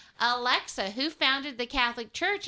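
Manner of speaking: plain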